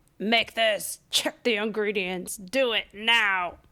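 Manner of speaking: put-on bossy-sounding child voice. Retelling how her son wakes her each morning: imitating her son. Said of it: "that's not really his voice".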